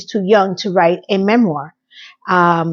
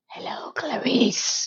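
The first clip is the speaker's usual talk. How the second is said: breathy whisper in a character voice; 5 semitones higher, 11 dB quieter than usual. Retelling a scene, introducing a creepy man: Hannibal Lecter voice. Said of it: "who I'm gonna call Hannibal Lecter".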